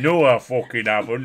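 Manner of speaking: put-on super thick Yorkshire accent. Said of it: "sounded super thick".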